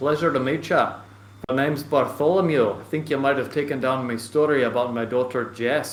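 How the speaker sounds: put-on just a slight touch of Irish accent. Voicing the main man the listeners go to talk to, Bartholomew, slight Irish voice. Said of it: "more of a slight Irish voice".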